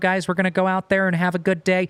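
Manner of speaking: croaky, froggy put-on puppet voice. Describing an athlete's voice to listeners, doing a Patrick Mahomes impression. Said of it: "He's got your Kermit the Frog type of voice".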